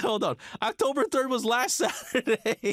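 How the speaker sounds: high, giggling, disbelieving laugh through the words.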